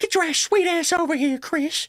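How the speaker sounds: high-pitched, creepy, come-hither cartoon voice. Describing a creepy man, imitating the creepy guy from Family Guy. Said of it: "like the creepy guy from Family Guy".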